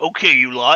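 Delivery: low-pitched voice. A game master voicing another Kenku addressing the players, in a deep voice. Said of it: "you hear in a deep voice".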